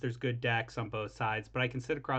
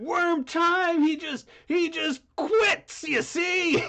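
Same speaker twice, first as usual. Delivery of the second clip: put-on angry griping voice, higher and louder; 8 dB louder than usual. Retelling how angry players complained about quitting: imitating angry players. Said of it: "everybody got so goddamn mad at me".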